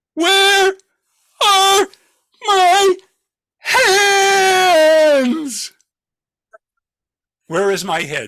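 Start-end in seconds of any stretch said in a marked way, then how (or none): 0.2-5.7 put-on halting mournful wail, very high, very slow, drawn-out. Telling a story, repeating what a woman called into the cold night: retelling a mournful call. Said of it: "call out in a mournful voice".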